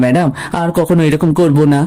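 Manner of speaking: ordinary talk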